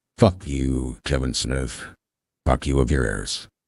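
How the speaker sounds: very low-pitched put-on seductive, sexy voice. Turning on a joking sexy voice to tell off Kevin Smith: put-on sexy voice. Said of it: "I'm gonna turn on my sexy voice".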